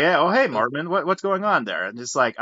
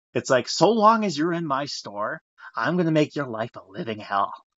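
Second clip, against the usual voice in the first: put-on spooky voice. Speaker acting out a threat someone made in their store, in a spooky voice. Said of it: "I'm trying to be spooky about this".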